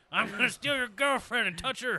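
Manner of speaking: very high, loud, belted cartoon villain voice. In a chat about cartoon characters, doing a Pete impression. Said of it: "I don't have a Pete impression".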